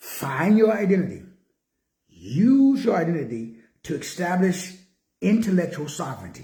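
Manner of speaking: slow, deliberate, word-by-word pacing, "use" drawn out. Speaker repeats the point to listeners, saying it slowly. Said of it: "Let me say that slow".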